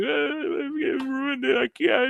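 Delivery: acted sobbing, wailing, very high and drawn out. Retelling a wedding guest breaking down in front of his mom; imitating someone bawling. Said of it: "He's just bawling".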